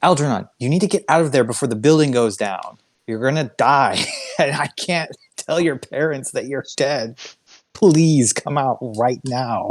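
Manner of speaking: desperate, frantic pleading tone, high. Voicing a character in the game, calling to another character: desperate pleading. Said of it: "She ju- she just sounds desperate".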